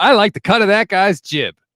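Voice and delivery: nineteen-fifties style speech. Imitating a team owner talking like someone from the nineteen fifties. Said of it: "talk like somebody out of the nineteen fifties".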